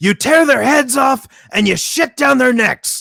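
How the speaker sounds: very high, shrill, loud yell. Quoting your favorite funniest line, from a film monologue to the team, imitating Robert Loggia yelling. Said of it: "he yells".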